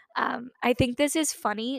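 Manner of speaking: voice breaking and cracking on the words. Commenting on a celebrity dating story she finds funny, voice cracking. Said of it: "My voice is cracking".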